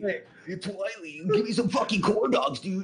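put-on Californian accent, pitched very high. Answering a request to show the accent: Californian accent. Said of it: "can you give us a Californian accent?".

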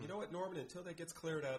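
normal talking voice

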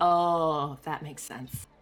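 slow, hushed half-whisper under breath, oh drawn out. In a role-play, Mina reacts to a distraught woman: half-whispering under her breath. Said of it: "Mina's gonna whisper under her breath now".

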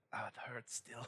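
weak, pained, feeble whisper. Voicing a weakened patient pushed back to the ground: weak and in pain. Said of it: "leans back as she's kinda like".

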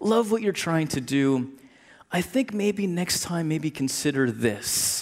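soft, kindly, sweet, gentle nudging tone. Quoting a woman's encouraging phone calls to tim, imitating her sweet gentle voice. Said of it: "she had this sweet gentle voice".

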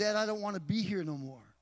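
acted tearful, crying pleading voice. A father retells his son's 3 a.m. phone call, imitating son crying. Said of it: "and he's crying on the other line".

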